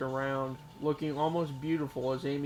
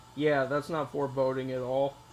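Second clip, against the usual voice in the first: plain reading voice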